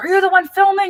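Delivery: harsh, shrill, very high, abrasive shouting. Retelling a man who charged up to the speaker while filming, imitating a man yelling abrasively. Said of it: "really abrasive and like yelling".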